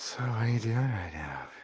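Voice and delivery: really breathy, airy, soft voice. Describing how she delivered a line, imitating a breathy voice. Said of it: "s really breathy".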